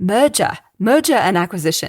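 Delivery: put-on Australian accent on "merger". Presenting a consulting firm, retrying a stumbled word, in an aussie accent. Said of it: "maybe try and say it with an Aussie accent".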